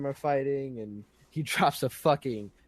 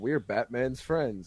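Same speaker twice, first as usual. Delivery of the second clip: put-on stupid-sounding hero voice. Retelling a movie scene, mocking Superman's line: stupid square Superman voice. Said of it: "all fucking stupid and fucking square and shit like he is".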